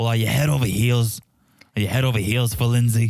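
fast, casual put-on Boston accent. Speaker retelling how John asked about the relationship with Lindsay, imitating John's accent. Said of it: "Why are you doing Magda Shark accent".

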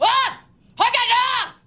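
shouting. Told to be louder, as if from the back of a horse: shouting. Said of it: "Louder, you're shouting it from the back of a horse".

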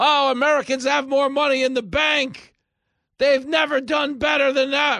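very high, very loud shouting rant. Mocking a politician's claims, imitating Joe Biden yelling. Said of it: "When he starts yelling".

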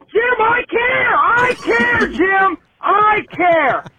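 shouting in frustration.

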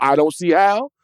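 doubtful tone, pitch rising on "how". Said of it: "Don't get me wrong".

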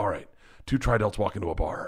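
acted under-breath mutter. Retelling his aside after a man warned him, retelling an under-breath mutter. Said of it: "And under my breath".

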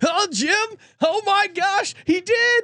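very high, excited, thrilled commentator-style call. Practising his Romo impression while watching reactions, doing a Romo impression. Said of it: "dial in my Romo impression".

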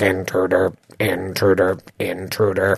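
very low, flat, metallic mechanical robot drone. Narrating a scene to listeners, a voice calls down the hallway: metallic robot voice. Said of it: "you hear this metallic voice".

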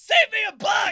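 shrill, very loud, high, drawn-out yell. Acting out a man who could not stop yelling: imitating him yelling. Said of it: "all he did was yell".

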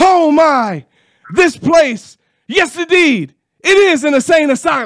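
very high, play-by-play sports announcer voice. Recreating a 1997 LSU call against Florida State: Mick Hubert impression. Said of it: "That was my best Mick Hubert impersonation".

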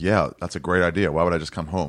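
ordinary delivery

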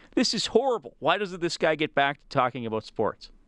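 ordinary talk

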